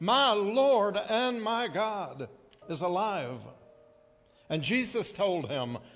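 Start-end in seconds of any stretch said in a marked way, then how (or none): 0.0-3.4 put-on very slow, high, exuberant drawn-out exclamation. Voicing Thomas greeting the risen Jesus, with great exuberance. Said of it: "with great exuberance and excitement and enthusiasm".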